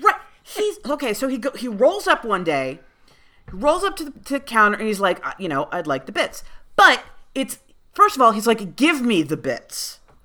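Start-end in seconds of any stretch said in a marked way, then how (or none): 8.8-10.0 acted-out demanding tone, slower. Telling a story about a man at the counter, imitating a demanding customer. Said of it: "He demands them".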